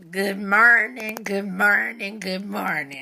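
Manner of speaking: bad, loud, slow, drawn-out church-announcer voice. Opening an album-a-day show, a Bernice Jenkins impression doing announcements. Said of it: "That's my uh, horrible impression of Bernice Jenkins doing the first Sunday announcements".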